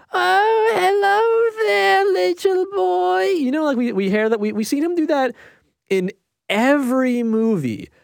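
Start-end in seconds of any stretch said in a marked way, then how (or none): 0.1-3.2 shrill, very high, creaky, drawn-out granny voice. Describing Adam Sandler dressed as a woman, doing his shrill voice. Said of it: "he speaks in the shrill voice".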